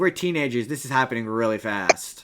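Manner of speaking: ordinary talk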